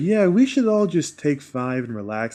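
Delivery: slow, easy, laid-back drawl. Showing the others a character's voice, Yandu's voice. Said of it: "That was Yandu's voice".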